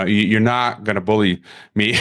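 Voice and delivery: ordinary talk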